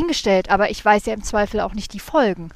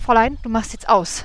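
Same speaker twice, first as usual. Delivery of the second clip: ordinary talk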